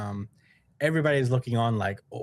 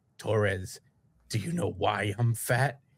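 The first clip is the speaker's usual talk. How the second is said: slow, ominous, scary, menacing tone; 3 semitones lower than usual. Retelling a cartoon scene where a fighter gets all scary: imitating a scary tone. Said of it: "he gets all scary".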